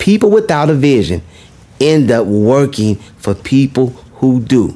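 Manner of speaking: very slow, deliberate, each word spaced and drawn out. Addressing ladies and gentlemen, repeating a point a second time, very slowly. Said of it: "I'm going to say that again very slowly".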